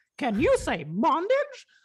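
put-on high cartoon mouse voice. Performing an old stand-up joke line: Mickey Mouse voice. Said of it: "a very fun Mickey line".

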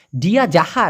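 ordinary talk, nothing marked

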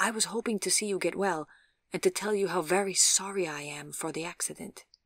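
plain

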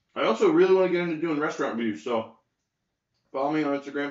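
talking with mouth full. Speaker asks viewers to follow on Instagram, talking with mouth full. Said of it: "I'm talking about mouthful".

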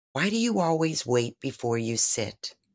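sincere, genuine, caring, compassionate tone. Recounting a one-on-one meeting, quoting her question, retelling a compassionate question. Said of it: "In the most genuine and compassionate voice".

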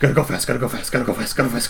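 heavy-breathing horse voice. Describing the horse sound heard in an animals Discord, heavy-breathing wild horse voice. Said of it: "He's breathing heavy, and he's wild".

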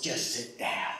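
mock stern mom tone, whispered and hushed. Retelling a babysitter fed up with a hollering boy, imitating a babysitter's tone. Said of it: "You know that tone that a babysitter or a mom gets".

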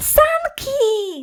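very high, shrill, joyful shout of delight. Felcia goes outside and finds mama, Frania and the sled, joyful shout. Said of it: "Krzyknęła Felcia z radością".

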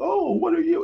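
put-on very high, sugary, cooing baby talk. Retelling how a movie character approached a creature: imitating baby talk. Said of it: "he starts, like, doing baby talk to it".

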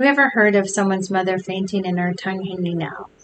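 plain

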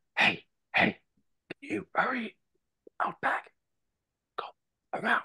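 loud urgent whisper. In a role-play, urging a party member to hurry around back; whisper-yell. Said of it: "I whisper yell to Goliath like".

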